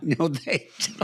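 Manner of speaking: slow, soft, drawn-out delivery.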